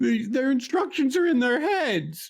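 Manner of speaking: screaming. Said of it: "and just screams".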